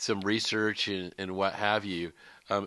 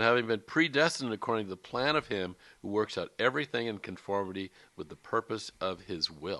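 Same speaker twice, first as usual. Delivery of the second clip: ordinary talk, nothing marked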